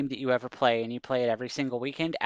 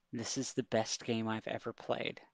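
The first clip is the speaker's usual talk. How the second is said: hushed whisper, very quiet; 3 semitones lower, 10 dB quieter than usual. Retelling what Eric Lang whispered at the expo table: imitating a whisper. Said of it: "whispered in my ear".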